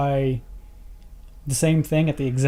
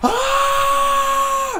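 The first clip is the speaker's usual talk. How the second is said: high-pitched scream. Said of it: "Him screaming".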